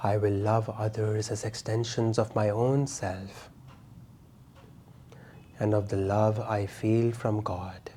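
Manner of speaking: soft, hushed whisper, under the breath. Repeating the affirmation once more: whisper. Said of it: "And now in a whisper".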